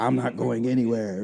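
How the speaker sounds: put-on loud calling-out yell in a woman's voice. Speaker retells a woman yelling in the background during a phone call, retelling a yell. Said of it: "yelling out".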